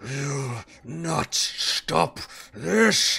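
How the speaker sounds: furious, enraged monster voice. Voicing a wounded creature turning on a player in fury: furious monster voice. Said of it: "he just howls in pain and turns to you with a fury in his eyes and says".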